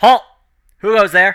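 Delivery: very high, very loud calling out. Narrating a game scene, voicing someone behind a barricade, calling out. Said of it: "you can hear a voice call out from behind the barricade".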